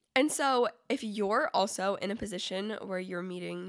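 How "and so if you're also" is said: usual speaking voice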